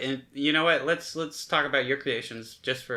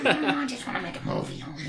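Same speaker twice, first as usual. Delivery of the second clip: put-on goblin creature voice; 10 semitones higher than usual. Asked to close out the show sounding like a goblin, in a goblin voice. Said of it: "I want to hear what you would sound like as a goblin".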